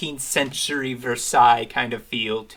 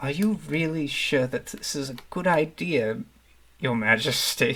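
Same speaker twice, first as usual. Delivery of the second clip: soft hushed stage half-whisper; 3 semitones higher, 3 dB quieter than usual. Voicing a courtier who half-whispers a worried question to a duchess: half-whispering in character. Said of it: "whispers over to her".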